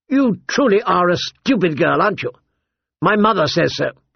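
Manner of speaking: cutting, scornful, sharp, high, contemptuous, taunting. Joffrey answers the girl who called him my lord, sharply. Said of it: "he said sharply".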